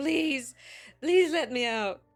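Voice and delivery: desperate screaming, pleading wail. Voicing a trapped creature banging below a trap door: screaming, pleading wail. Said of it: "his cries start to turn to pleading wails of him just screaming".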